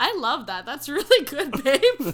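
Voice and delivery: very loud, high, caught-off-guard approving tone. Praising their partner after a remark on relationships: sounding surprised. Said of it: "Don't sound so surprised".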